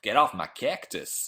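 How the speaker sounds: put-on Texas accent. After saying they can't do the accent, the speaker tries a Texan accent. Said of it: "What should I say in a Texan accent?".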